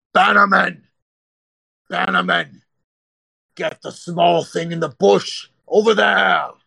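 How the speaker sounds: raspy, rough, high orc shouting. Game master voicing an orc who spots the player jumping toward a bush, orc yelling orders. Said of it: "you can kind of hear him yell out".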